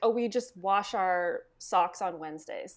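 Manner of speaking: normal talking voice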